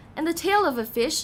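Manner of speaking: ordinary delivery, nothing marked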